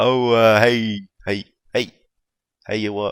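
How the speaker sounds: very loud, bellowing, heavy dwarf voice. Narrator voices a very fat dwarf greeting visitors to his shop; Ephraim Moisels voice. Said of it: "really fat dwarf. ... And he says".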